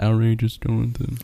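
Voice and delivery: soft, quiet, murmured, low-key. Retelling how a friend quietly said the intro: imitating Jonathan speaking quietly. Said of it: "he quietly said".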